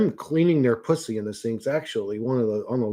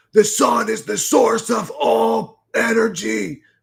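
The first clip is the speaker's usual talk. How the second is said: put-on, very high, rough, raspy shouting; 10 semitones higher, 3 dB louder than usual. Recounting what a man kept yelling out, retelling a man's yelling. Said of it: "was yelling".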